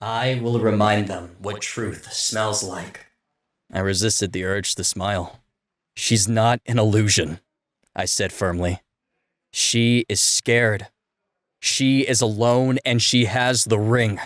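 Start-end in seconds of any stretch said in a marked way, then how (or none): 0.0-3.1 heated, low, dangerous murmur. A presence within the narrator speaks in their mind, murmuring. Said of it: "[name]' presence stirred within me, / she murmured in my mind. / a low, dangerous heat rolling through the chamber. Say the word, she murmured in my mind. / she murmured in my mind".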